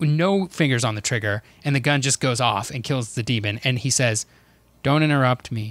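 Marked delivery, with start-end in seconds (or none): 4.8-5.7 really monotone, flat, unvarying delivery. Describing a goofy video, quoting a man after the gun kills a demon; really monotone. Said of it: "like a really monotone way".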